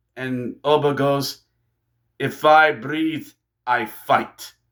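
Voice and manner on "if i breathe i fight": put-on slow, deliberate delivery in a Russian accent. Retelling what Oba said to Triple H, quoting Oba in a Russian accent. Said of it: "Sorry if I gave him a Russian accent".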